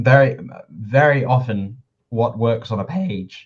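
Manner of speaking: voice cracking mid-phrase. Speaker talking with a co-host about writing, voice cracks. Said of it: "can we cut that voice crack out?".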